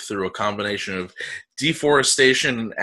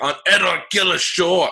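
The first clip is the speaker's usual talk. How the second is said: attempted Scottish accent, much higher pitched; 8 semitones higher than usual. Speaker reading a line aloud while being recorded, attempting a scottish accent. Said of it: "bail on my Scottish accent".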